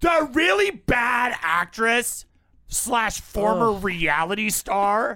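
bitchy tone. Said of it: "I'll say it more bitchily".

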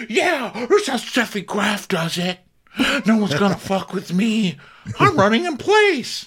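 very high-pitched, angry mom voice. Retelling a player running in place at the net: imitating an angry mom. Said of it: "that angry mom thing at the net".

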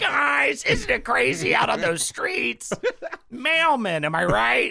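very high, swooping, sing-song stand-up comic delivery. Mocking a friend's old stand-up comedy: imitating Jake's old stand-up voice. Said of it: "why does he talk like that?".

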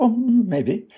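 high-pitched put-on voice, pitched way up.

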